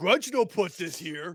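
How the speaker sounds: calm, completely unbothered, unaffected character voice. Voicing Grudge as he finds something on his neck: voicing Grudge. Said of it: "He seems completely unaffected".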